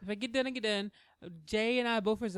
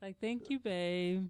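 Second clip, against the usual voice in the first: sad-sounding voice. Showing how to say a thank-you on request, sounding sad. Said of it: "you sounded so sad".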